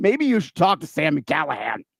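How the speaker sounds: rasping, rough, creaky put-on promoter voice. Plugging the promoter for anyone wanting bookings: Sammy Callahan voice. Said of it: "that was my Sammy Callahan voice at the end there".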